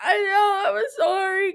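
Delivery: mock tearful sobbing, high and slow. Retelling apologizing to a classmate after sneezing: retelling own crying apology.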